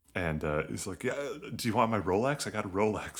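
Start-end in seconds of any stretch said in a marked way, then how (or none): 1.0-3.2 fawning, very flattering, eager-to-please tone. Retelling a character's plea to a bodyguard: Lenny's flattering tone. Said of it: "repeats all of that in the most flattering tone possible".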